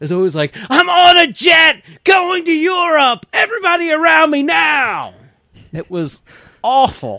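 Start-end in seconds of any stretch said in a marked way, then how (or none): 0.7-5.1 over-the-top, very high shouting at full voice. Mocking a book's dialogue, the speaker acts out Shaft's mock over-the-top shouting. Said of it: "imagining every character shouting at the top of their lungs".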